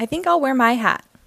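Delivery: plain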